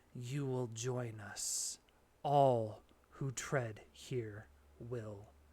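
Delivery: hollow whispered voice. Narrator voices a hollow voice rising as the ground shifts, hollow whisper. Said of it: "You hear a hollow voice whisper".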